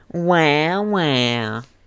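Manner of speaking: mocking nasal voice. Narrator reading a character parroting another's words; mocking nasal voice. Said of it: "words in a nasally voice".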